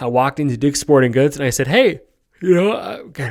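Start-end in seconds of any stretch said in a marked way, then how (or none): 1.7-3.3 very slow, high words stretched mid-yawn. Retelling walking into Dick's Sporting Goods to buy a gun, yawning. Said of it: "sorry, I'm yawning".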